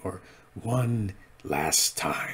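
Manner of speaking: put-on whispered, soft, old-style movie trailer announcer voice. Talking about a character wielding the dark saber, slip into an old Star Wars trailer announcer voice. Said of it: "as the old uh, Star Wars trailer announcer voice would say".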